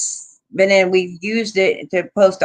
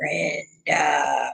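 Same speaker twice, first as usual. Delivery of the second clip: creepy, rough-edged, low, creaky voice; 4 semitones lower, 7 dB quieter than usual. Retelling what a presence in the car said: imitating a creepy voice. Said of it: "in a really creepy voice".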